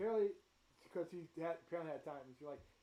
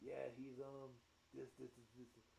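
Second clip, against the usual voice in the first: acted, very quiet, hushed, grudging reluctance; 4 semitones lower, 12 dB quieter than usual. Voicing a character who reluctantly explains a player's powers: begrudging voice. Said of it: "she says it in, like, a begrudging voice".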